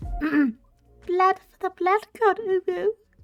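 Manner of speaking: put-on high, slow, sweet, cutesy little accent. Repeating a line in character: cutesy accent. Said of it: "I gotta do the cutesy accent".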